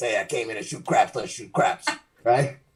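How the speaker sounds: hushed, theatrical gangster-style mobster voice. An actor recalls playing a mobster in Guys and Dolls; mobster voice from Guys and Dolls. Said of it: "talking like this".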